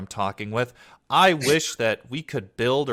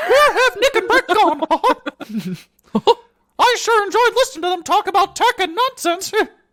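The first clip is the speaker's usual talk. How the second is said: very high, cartoony voice; 6 dB louder than usual. Voicing an audience member wondering where the hosts went: Mickey Mouse voice. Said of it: "that sounded like Mickey Mouse actually".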